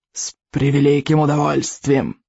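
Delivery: hissing dragon voice. Narrator reads a dragon's eager reply, hissed. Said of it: "прошипел он".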